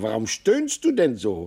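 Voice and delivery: ordinary talk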